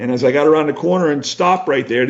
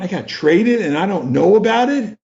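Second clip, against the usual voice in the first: mock upset, pitched-up incredulous tone; 5 semitones higher than usual. Retelling hearing about being traded, the speaker reenacts being really upset. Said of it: "So I'm really upset".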